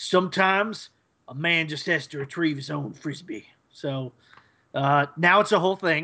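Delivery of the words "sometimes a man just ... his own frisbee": put-on folksy cowboy country Western accent. Retelling a cartoon scene where Finn answers Jake about fetching a frisbee: Finn in a country Western accent. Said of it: "Finn says in like a country Western accent".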